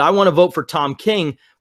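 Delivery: ordinary talk, nothing marked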